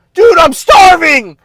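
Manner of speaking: shrill screamed outburst, very high and very loud. Speaker demonstrates an over-the-top way to tell someone something bothers you, screaming. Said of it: "if you're coming out screaming like that".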